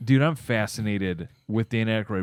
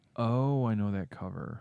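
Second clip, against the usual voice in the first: play-acted slow, knowing, drawn-out aha of recognition; 7 dB quieter than usual. Predicting how the other speaker will react to a movie cover: imitating their recognizing tone. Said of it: "Do I have to say it in that tone?".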